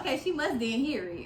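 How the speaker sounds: normal talking voice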